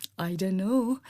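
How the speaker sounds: mock timid, soft, sheepish voice. Retelling how Papa smiled sheepishly when asked his score, retelling a sheepish reply. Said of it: "started smiling sheepishly".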